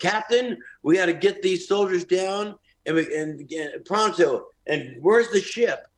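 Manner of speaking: put-on high yell. Describing a man turning to a wall before a show, the speaker imitates him yelling. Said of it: "he starts just yelling".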